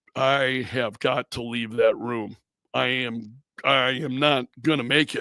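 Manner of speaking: mock muttering under breath. Retelling leaving a confrontational conversation: imitating muttering under breath. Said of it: "just under my breath".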